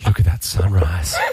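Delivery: put-on, mock-sultry female voice. Asked who spoke during the word alarm, the contestant imitates a sultry lady's voice. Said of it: "a sultry lady's voice going".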